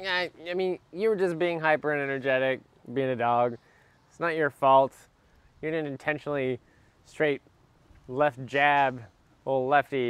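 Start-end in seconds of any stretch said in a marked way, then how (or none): none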